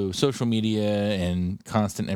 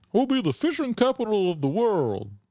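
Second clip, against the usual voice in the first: put-on voice, very high-pitched, swooping up and down; 13 semitones higher than usual. Joking about the state's future, doing a Jim Justice impression. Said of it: "that's my best Jim Justice".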